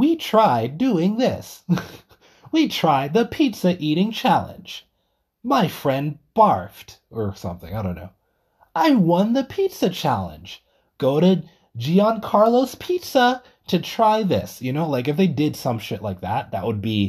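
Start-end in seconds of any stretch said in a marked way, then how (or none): 0.0-14.6 annoying, high, sing-song hype narrator voice. Imagining a fifteen-second pizza promo clip, the speaker uses the annoying promo-video voice. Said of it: "with the annoying voice".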